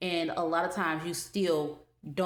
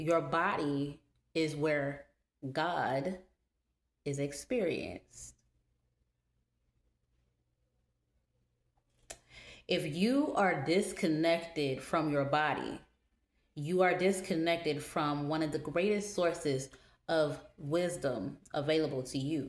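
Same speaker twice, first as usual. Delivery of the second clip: slow, deliberate, unhurried speech. Speaker addressing an audience, wanting them all to catch this; speaking slowly. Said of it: "I'm speaking slowly".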